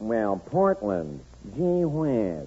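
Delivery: low, soft, slow drawling voice. Doing an imitation of a famous radio character for others to guess, Fred Allen imitation. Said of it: "he sounds like this".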